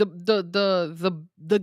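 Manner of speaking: stammering, repeating "the" over and over. Asked for thoughts on AEW, starting an answer while stuttering. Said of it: "I'm stuttering here".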